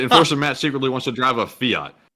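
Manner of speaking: plain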